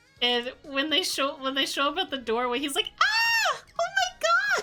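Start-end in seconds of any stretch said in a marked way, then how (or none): 3.0-4.6 put-on scream, startled. Retelling a player's reaction to a jump scare: imitating a scream. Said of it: "his scream".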